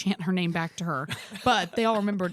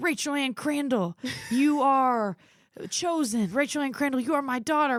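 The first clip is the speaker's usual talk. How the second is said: high, declaring announcer-style delivery into a microphone; 6 semitones higher than usual. Retelling a friend speaking to a crowd on the mic: imitating Rachel on the mic. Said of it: "I remember her hopping on the mic and being like".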